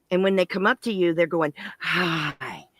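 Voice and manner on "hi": sudden, in-your-face jump-scare delivery. Retelling how costumed clowns greeted people: imitating a sudden in-your-face hi. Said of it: "jumping in your face".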